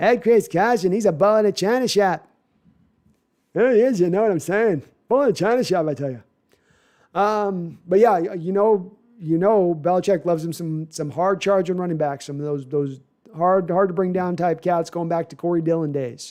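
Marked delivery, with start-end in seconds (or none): 0.0-6.2 put-on Boston accent. Talking about a running back, do a little bit of a Kennedy Boston accent. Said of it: "Kennedy Boston accent".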